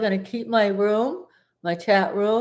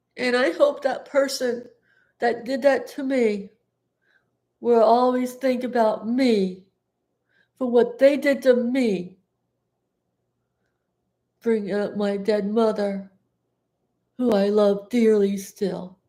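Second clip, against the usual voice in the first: crying, in tears; 2 semitones higher than usual. Speaking on camera about someone who brought up their dead mother, crying. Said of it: "I'm gonna cry".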